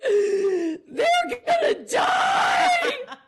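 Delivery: put-on hysterical crying, very high, loud, shrill. Retelling crying as a small child, parents asking if okay: imitating crying hysterically. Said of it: "and I'm crying, and I can hardly breathe".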